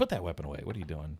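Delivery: mock stern, telling-off tone. Retelling how game characters react to a drawn weapon: imitating someone scolding. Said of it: "they scold you".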